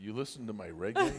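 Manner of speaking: surprised voice, as if hearing it for the first time. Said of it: "he looked at me like".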